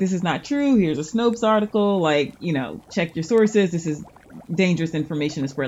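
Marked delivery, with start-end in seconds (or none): none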